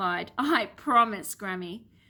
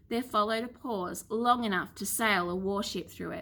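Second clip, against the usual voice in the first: ordinary delivery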